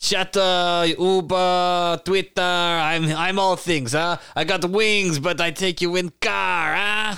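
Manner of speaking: put-on vague foreign accent, broken English, high and slow. A dragon driving a Beetle chats up his passengers; vague foreign accent.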